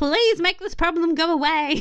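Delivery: high-pitched, real, desperate begging. Recapping a show, the speaker acts out Nigel's line, mock-desperate Nigel. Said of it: "he's like real desperate".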